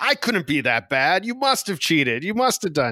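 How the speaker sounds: teasing, swooping, sarcastic taunt. Retelling what is said after losing a game: imitating own sarcastic taunt. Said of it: "very sarcastically, I'll say".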